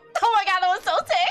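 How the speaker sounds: proud and thrilled. A player voices Spice watching Bubbles pull off an awesome maneuver, Spice gleaming with pride. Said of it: "gleaming with pride and just like".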